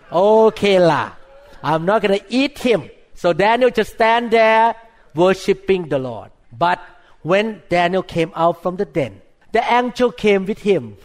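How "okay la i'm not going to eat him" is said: put-on Singaporean English accent, Singlish style with la tag. Retelling the story of Daniel, voicing the lion in a Singaporean accent. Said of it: "I talk like a Singaporean".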